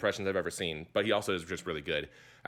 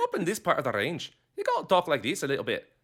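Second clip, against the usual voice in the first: weak, put-on, sing-song Scottish accent; 8 semitones higher than usual. Explaining the voice used for a character, in a not-great Scottish accent. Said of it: "It's not a great accent".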